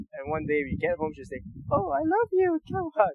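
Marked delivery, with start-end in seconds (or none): 1.7-3.1 put-on very high, squeaky, bubbly little girl voice. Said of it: "the youngest girl is just really bubbly".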